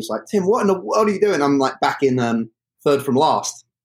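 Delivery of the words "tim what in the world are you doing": high, screaming coach-style yell. Retelling a race where the coach yells from the track: imitating Tom screaming. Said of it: "he's screaming at me".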